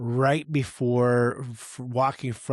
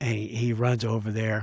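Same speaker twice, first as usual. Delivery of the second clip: ordinary talk, nothing marked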